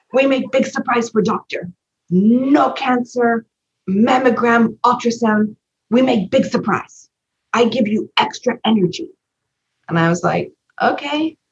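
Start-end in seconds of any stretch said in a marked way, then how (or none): 0.1-9.1 high, terrible, really bad put-on Japanese accent. Quoting someone who spoke to the speaker, in a really bad Japanese accent. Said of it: "it's a really bad Japanese accent".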